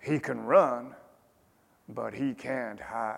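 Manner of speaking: put-on softly spoken in an American accent. Quoting Joe Louis's reply on coping with a rival boxer: American accent as Joe Louis. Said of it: "forgive my American accent here".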